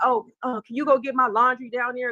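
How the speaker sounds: play-acted, bossy, entitled tone. Complaining about a man, the speaker mocks his entitled demand. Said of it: "acting like women is his slave".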